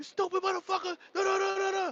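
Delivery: very high, outraged, furious string of curses. Retelling a man cussing him out: imitating someone cussing him out. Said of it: "cussing me out".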